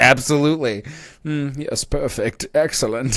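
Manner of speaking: aristocratic German-like voice.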